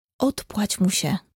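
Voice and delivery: quiet whispered words. Artur speaks to Ludka during a question game with Fred; whispering. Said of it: "szepnął Artur do Ludki".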